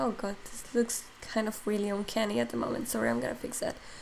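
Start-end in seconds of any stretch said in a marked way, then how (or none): 2.9-3.7 low, soft, failing voice. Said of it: "my voice is giving up".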